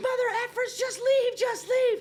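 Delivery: very high, shrill, loud, mad screaming. Retelling backed-up traffic where a woman was yelling, imitating a woman screaming. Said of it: "screaming at the top of her".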